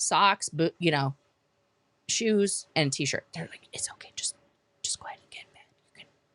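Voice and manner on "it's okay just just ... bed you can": quiet whisper. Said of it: "they're whispering now".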